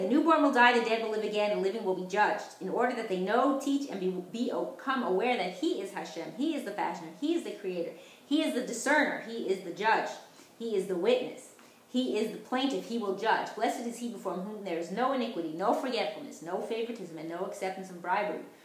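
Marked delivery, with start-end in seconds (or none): none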